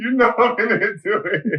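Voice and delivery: very high, cross, mad, insistent tone. Mimicking his partner when she gets mad: imitating her angry pleading. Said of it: "She be like this".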